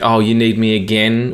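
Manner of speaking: put-on annoyed assistant voice. Imitating Siri sounding disappointed in the user: imitating Siri sounding put out. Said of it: "Siri always sounds like she's like".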